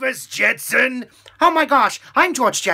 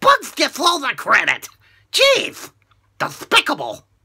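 zany, swooping cartoon duck voice. Rattling off cartoon impressions, the speaker does Daffy Duck. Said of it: "Daffy Duck".

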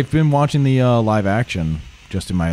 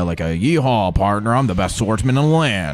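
put-on Western cowboy voice. Imagining how an anime swordsman should sound, doing Mihawk with Western cowboy voice. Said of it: "I imagine him having like a Western cowboy voice".

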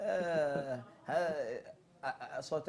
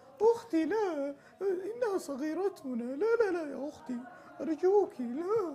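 shrill, very high, pleading dubbed-cartoon voice; 13 semitones higher than usual. Imitating dubbed cartoons for the others, in a dubbed cartoon voice. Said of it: "بقلد لكم افلام كرتون".

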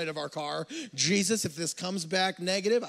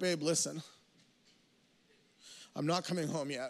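acted tearful crying voice, quieter; 6 dB quieter than usual. Retelling calling his wife after talking to his mother; retelling a tearful phone call. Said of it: "I'm already in tears".

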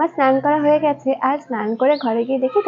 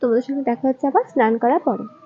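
normal talking voice

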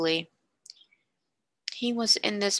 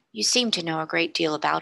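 ordinary delivery

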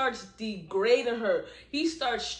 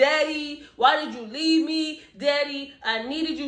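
mock shouted, pleading yell; 4 semitones higher, 4 dB louder than usual. Recounting a girl yelling at a man about her daddy, imitating her yelling. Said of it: "yelling at the man".

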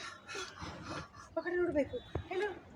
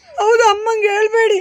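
loud crying voice.

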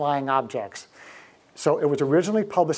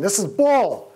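put-on outraged, fed-up, high-pitched yell; 5 semitones higher, 4 dB louder than usual. Retelling yelling back at documentaries on television: imitating own screaming. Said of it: "I start screaming at the television".

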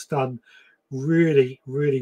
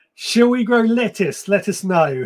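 high, loud, giggly reading aloud. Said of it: "I'm just laughing because".

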